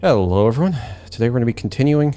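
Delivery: breathless, winded, rushed, out-of-breath delivery. Greeting viewers at the start of a coding tutorial, out of breath. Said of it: "excuse me for being out of breath".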